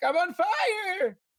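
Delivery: frantic, very high panicked yelp. Acting out running to another character for help: panicked cry. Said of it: "being like".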